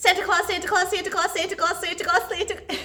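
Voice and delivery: very fast rapid-fire delivery. Leading viewers at home in a clapping game, saying it as fast as possible. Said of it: "as fast as we can".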